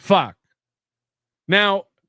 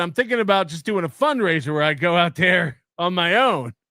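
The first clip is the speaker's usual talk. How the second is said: ordinary talk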